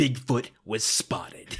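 portentous, dramatic, acted-out announcing tone. Quoting a character's line of dialogue to a co-host, in a mock-dramatic tone. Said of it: "Bigfoot in a dramatic tone of voice".

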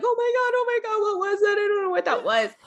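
mimicked panicked crying. Retelling a phone call where she freaked out: imitating her crying. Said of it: "crying like".

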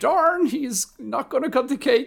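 very high, slow, stretched-out drawl. Retelling a movie scene about a cake: Shaggy from Scooby-Doo voice. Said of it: "the voice of Shaggy from Scooby-Doo being like".

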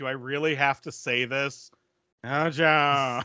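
put-on blasé, bored-sounding delivery. Retelling a remembered movie line: imitating Heavy Duty's blasé delivery. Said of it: "it's the most blasé delivery".

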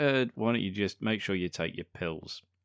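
ordinary talk

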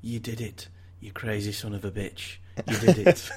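put-on mellow Manchester accent. Acting out a line from the back of the car: soft Mancunian voice. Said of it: "a soft Mancunian voice pipes up".

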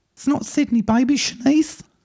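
squeaky, very high-pitched character voice. Playing Shanice answering Ghostface's phone call: Shanice voice. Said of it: "called Shanice".

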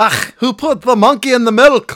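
very high, booming, very drawn-out, slow bellow. Asked by the other speaker to say a line: Groundskeeper Willie voice. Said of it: "literally sounded like groundskeeper Willie".

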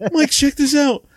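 very high, loud shout. Retelling flying a plane and calling to a friend: retelling yelling to a friend. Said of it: "I'm going".

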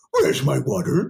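put-on cartoon dog voice. Recalling first discovering the voice at home, Scooby-Doo voice.

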